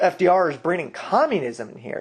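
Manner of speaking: usual speaking voice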